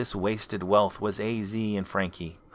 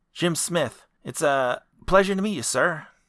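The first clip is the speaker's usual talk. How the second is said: nervous, deferential, polite, pitched up; 7 semitones higher, 5 dB louder than usual. Jim introduces himself to a man he calls sir; Jim Smith, nervous. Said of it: "It must be around 138 or so by now. / It must be around 138 or so by now. / said [name] nervously. / It must be around 138 or so by now. / and here all it took was a decent accountant to straighten th".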